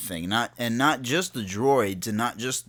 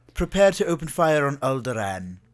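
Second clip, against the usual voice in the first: put-on British accent with a flat a; 3 semitones higher, 3 dB louder than usual. Imitating the Empire's Imperial officers giving an order, in a British accent. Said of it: "they often have British accents, ... they have the the uh, the flat A".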